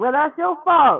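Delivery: loud voice. Speaker answering someone who says he hears attitude, with a raised voice. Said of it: "Did you just raise your voice at me?".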